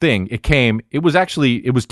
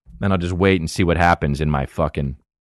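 usual speaking voice

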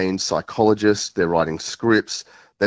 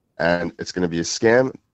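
usual speaking voice

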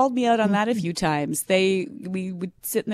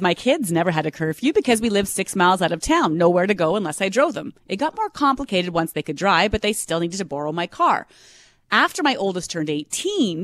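ordinary talk

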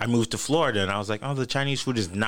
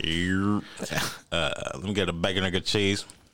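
normal talking voice

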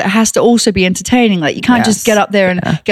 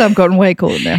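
ordinary talk

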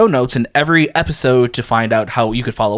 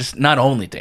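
put-on disappointed tone; 4 dB quieter than usual. Podcast host rereading a line from a listener's letter: mock disappointment. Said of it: "read that with like almost like disappointment".

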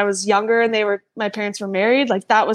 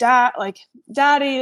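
put-on tearful crying; 3 semitones higher than usual. Retelling calling for dad as police took him: imitating own past crying. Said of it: "and I was just crying".

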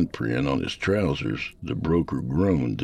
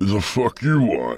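put-on drunk, slurred words running together, pitched up; 6 semitones higher, 4 dB louder than usual. Narrator reading a man's reply to a stranger as he tries to stand, slurred speech. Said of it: "Jack slurred through his scraggly beard".

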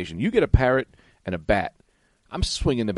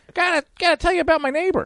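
very high, put-on little talking bird voice. Acting out a parrot reporting a neighbor at the police station: put-on parrot voice. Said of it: "Like a parrot walks in into a police station, like a little guy".

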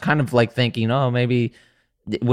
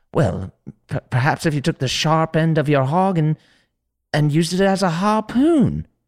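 owl voice, higher pitch; 5 semitones higher than usual. Pitching a story idea, auditioning the voice for an owl character: voicing the owl character. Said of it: "this is my audition for the owl".

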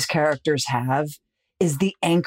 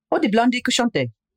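put-on French with Italian accent, higher pitch; 7 semitones higher than usual. Retelling what Marina says: imitating Marina's Italian-accented French. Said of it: "she's speaking French with an Italian accent".

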